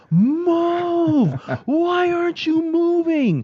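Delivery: put-on, very high, drawn-out, top-of-the-lungs yelling. Telling the others how he played at home, retelling yelling at full lungs. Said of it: "I am like yelling at the top of my lungs".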